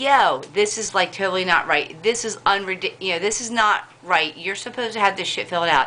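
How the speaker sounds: normal talking voice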